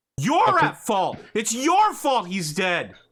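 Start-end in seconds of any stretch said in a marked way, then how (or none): 0.2-1.2 furious, angry yelling, higher and louder. Voicing Buck, held back from a fight: furious screaming. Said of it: "he's just screaming".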